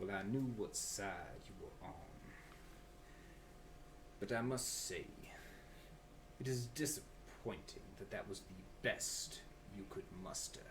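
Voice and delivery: deep, very quiet villain voice, barely above a hush. Voicing Dreadfoot speaking to a player who threw a javelin: Dreadfoot voice. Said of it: "he's just like".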